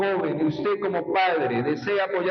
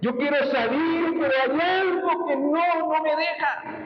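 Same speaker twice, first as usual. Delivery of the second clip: put-on, very high, tearful weeping; 9 semitones higher than usual. Retelling a young man's words from an interview, imitating someone crying. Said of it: "y llorando decía con lágrimas".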